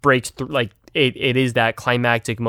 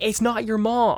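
put-on very high, slow, drawn-out yell; 11 semitones higher than usual. Acting out a character answering in a scene idea: imitating someone yelling back. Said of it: "And him yelling back".

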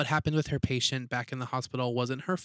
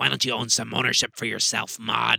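eerie small voice, raised pitch, raspy and creaky; 2 semitones lower, 6 dB louder than usual. Recounting a scene, quoting her words to Maude in a scary little voice. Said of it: "it's such a scary little voice".

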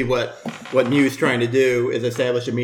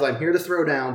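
ordinary talk, nothing marked

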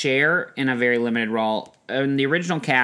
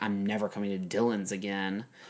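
put-on under-the-breath mutter, lower and quieter; 4 semitones lower, 10 dB quieter than usual. Retelling a candy store customer, the speaker is imitating someone muttering under her breath. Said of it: "under her breath".

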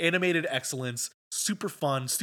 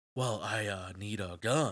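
robot-like put-on voice, lower and quieter; 6 semitones lower, 5 dB quieter than usual. Discussing a trailer, imitate the acting in it: Keanu talking like a robot. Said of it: "why are you talking like a robot?".

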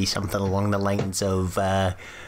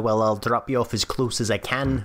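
ordinary talk, nothing marked

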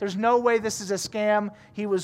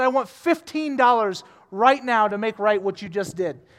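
plain

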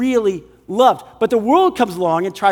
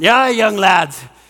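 put-on spoken in a Scottish accent. Speaker imitates an 80-year-old biblical scholar addressing young lads: Scottish accent. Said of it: "this is a great Scottish accent".

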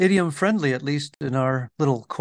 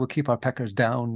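ordinary delivery

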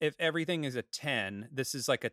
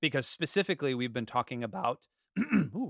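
voice cracking, breaking up high. Recapping the series for viewers, voice cracking. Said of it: "my voice just cracked there".

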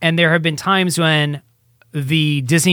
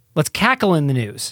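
usual speaking voice

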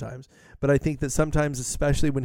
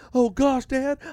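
mock-scared man voice, higher; 11 semitones higher, 3 dB louder than usual. Mocking a performer's theatrical funny voices, mock-scared guy voice. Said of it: "I'm doing the scared guy".

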